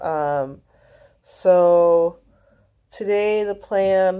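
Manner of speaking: very slow, yawning through the words. Starting to explain today's plan, yawning while talking. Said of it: "sorry, I've been yawning".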